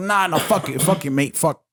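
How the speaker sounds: put-on rough, gruff, sort-of Italian accent. As if someone is mimicking a character who snaps in a gruff, vaguely italian accent, refusing to cooperate and swearing angrily. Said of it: "he almost has like an Italian accent".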